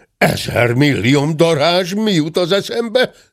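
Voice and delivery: sudden high shout, pitch climbing to the end. Mr. dörmögő strikes his forehead and cries out; shouting. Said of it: "Kiáltotta".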